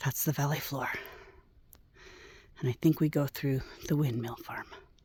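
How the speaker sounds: heavy, out-of-breath breathing. Describing the view of the valley floor, breathing heavily. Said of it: "I'm breathing heavy, sorry".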